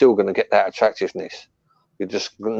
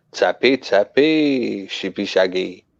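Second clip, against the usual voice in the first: put-on Welsh accent. Answering a question that asks for a Welsh accent, Welsh accent. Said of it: "can you do a, a Welsh accent".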